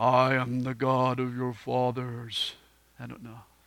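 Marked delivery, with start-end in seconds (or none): 0.0-2.5 very low, hushed, drawn-out voice. Recalling the burning bush scene in The Ten Commandments, doing the Ten Commandments God voice. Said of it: "not enough reverb to get my voice to do what it did in that movie".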